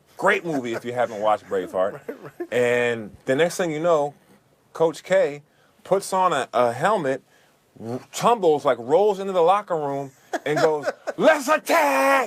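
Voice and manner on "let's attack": put-on fired-up shout, very high and enthusiastic. Telling how the coach rolled into the locker room, retelling an enthusiastic shout. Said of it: "you could tell how enthusiastic he was".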